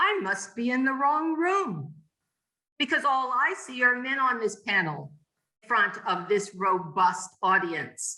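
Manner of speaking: put-on very bold, fearless, outspoken tone. Retell how a minister stood up and addressed a panel of men, imitating a very bold voice. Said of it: "she said in a very bold voice".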